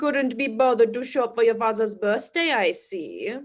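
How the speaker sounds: talking like a vampire. Scolding someone for not showing up to their father's birthday, in a vampire voice. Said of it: "Why do you sound like a vampire".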